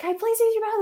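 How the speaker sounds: put-on very high, desperate, panicked tone. Retelling a mother's request at a stranger's door: imitating a panicked plea. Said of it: "she's, like, panicking".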